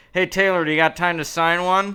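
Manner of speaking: very loud, high call out of the side of the mouth. Retelling leaning toward a man walking past, speaking out of the side of the mouth. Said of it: "out of the side of my mouth".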